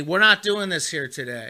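ordinary delivery

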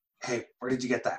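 hushed half-whisper. Speaking in character to a little creature pet: half-whispering.

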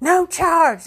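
high, shrill, way too loud hollering scream. Recounting what a lady at the pharmacy counter screamed, retelling a scream. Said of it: "she screamed".

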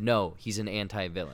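ordinary talk, nothing marked

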